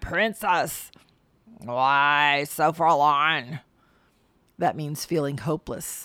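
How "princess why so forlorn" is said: frog-like croaking voice. Reading a story: a voice speaks to a princess crying on a stump, croaking voice. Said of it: "heard a croaking voice say".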